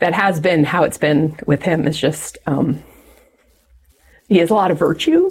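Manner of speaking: choked up, teary voice, near tears. Speaking about a partner's virtue, getting teary. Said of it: "I'm getting teary".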